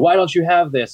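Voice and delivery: mock yelling in a high voice. Retelling a customer yelling at her in a lobby full of customers: retelling a customer's yell. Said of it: "she's yelling at me".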